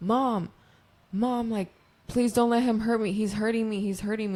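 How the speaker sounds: high-pitched, tearful, crying, begging tone, in pain. Retelling a girl begging her mom for help, imitating a crying plea. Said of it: "And like crying to the mom".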